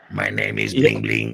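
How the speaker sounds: put-on robot voice. Imitating Bling Bling, who talks with a robot voice. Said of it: "he talks with, like, a robot voice".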